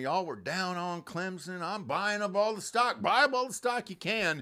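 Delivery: loud, high, rising, fired-up shout. Retelling a speech after the game into a camera: imitating Dabo screaming. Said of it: "where he's screaming in a camera".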